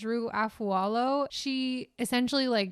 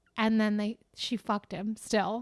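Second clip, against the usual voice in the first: ordinary talk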